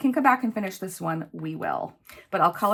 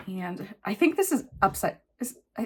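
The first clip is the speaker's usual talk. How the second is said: stammering, halting stutter with broken-off restarts. Filling in dice rolls during a game, stuttering. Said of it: "sorry, I'm stuttering".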